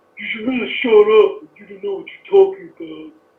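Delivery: put-on dumb, stupid-sounding guy voice. Showing a second voice asked for: put-on stupid guy voice. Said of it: "a stupid guy".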